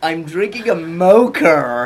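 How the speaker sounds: put-on very slow, broadest, drawn-out American accent. Quoting someone about their big coffee, in a strong american accent. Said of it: "in the most American accent I've ever heard in my life".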